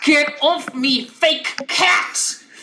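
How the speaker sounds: high, spitting, hissing cat-like snarl. Voicing a character pinned under a paw, as Lyra hissing. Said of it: "And like in the hissing, she is like".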